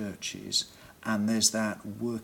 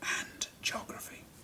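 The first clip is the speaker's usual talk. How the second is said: put-on whisper, much quieter than surrounding speech. Acting out an audience member in the third row, imitating a whisper. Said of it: "you would be whispering from the third row".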